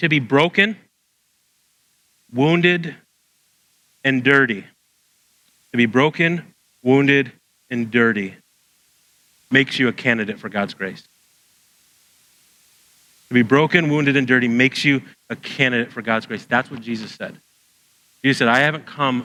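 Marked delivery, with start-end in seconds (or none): 0.0-16.4 spoken slowly, unhurried pace. Speaker addresses listeners who are writing it down, spoken slowly. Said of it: "I'm going to say this slow".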